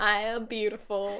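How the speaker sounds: put-on Southern accent. Repeating affirmations after the other speaker: [name]'s Southern accent. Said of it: "I feel like I'm doing this accent".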